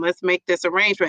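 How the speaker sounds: normal talking voice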